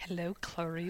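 eerie, unsettling, creepy voice. Mimicking the co-host's greeting: imitating a creepy greeting. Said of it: "You sounded like".

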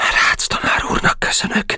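said quietly, softly, hushed. Narrator reads the little blond boy's answer to Boka, said quietly. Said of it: "mondta halkan a kis szőke".

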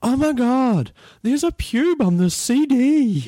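mock, very loud, shrill, very high room-filling shout. Retelling what a woman announced to everyone within 100 meters: retelling a very loud shout. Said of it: "she says in her loudest voice possible".

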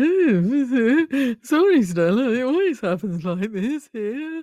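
high voice, drawn-out oh. Picturing the same scene, imitating Pip. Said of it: "And Pip there".

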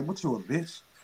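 goading, hushed, taunting stage half-whisper. Retelling what the devil on the shoulder says: imitating a half-whisper. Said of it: "the devil on my shoulder just whispered".

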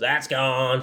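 flat, raspy monotone smoker's voice. Retelling what an older woman umpire called out, in her monotone smoker's voice. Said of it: "she has like this real monotone, like she's smoked Camel cigarettes for 40 years voice".

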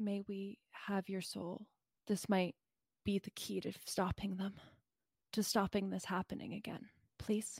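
very, very soft and quick. A character walks up to the Minotaur and speaks to him in a very soft voice. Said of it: "very, very softly says".

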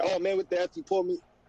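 plain

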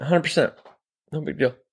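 unsure, losing confidence, trailing off. Answering doubt about building it in five days, trailing off, losing confidence. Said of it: "Just kinda trailed off there at the end".

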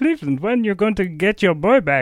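cartoon bear voice. Presenting a chosen ADR piece, asked to do the bear's voice from The Cleveland Show. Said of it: "do the bear's voice".

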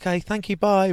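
very high put-on voice. Quoting what they said before leaving, in a high voice. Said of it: "my high voice".

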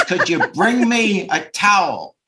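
put-on loud, scary, no-nonsense tone. Retelling what she asked after fixing the sink leak, imitating her scary tone. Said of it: "in the tone of voice scary".

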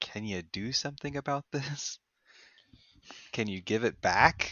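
hushed half-whisper, leaning close, in character. Asking another character for help in a game scene: half-whispering in character. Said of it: "and whisper".

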